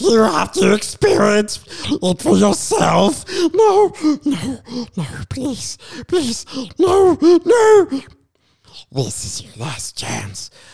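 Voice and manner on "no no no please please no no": very high creature voice, wildly swooping and sing-song. Breaking into Matrix lines with a pleading interjection, in a Gollum impression. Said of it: "in your best Gollum Sméagol impression".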